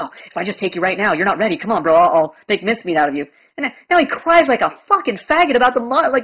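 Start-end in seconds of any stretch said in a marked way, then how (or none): 0.0-3.3 mock psyched-up, gung-ho hyped voice. Mocking an opponent who psyched himself up for a debate: imitating a psyched-up gung-ho guy. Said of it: "he thinks he's catching me off guard".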